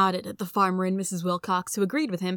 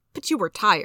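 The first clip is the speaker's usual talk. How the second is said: ordinary delivery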